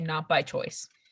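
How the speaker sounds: low, half-to-oneself, under-the-breath mutter. Voicing a character replying to someone walking away: muttered under breath. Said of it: "under my breath, I say".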